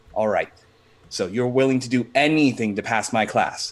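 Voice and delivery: ordinary talk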